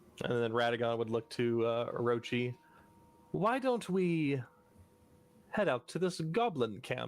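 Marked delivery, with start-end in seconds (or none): 3.3-7.1 deliberately called out, spoken up. Playing a character speaking to a companion so a stranger can overhear: quite loud. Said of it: "He says it quite loudly".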